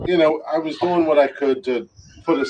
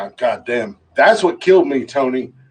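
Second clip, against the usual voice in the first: normal talking voice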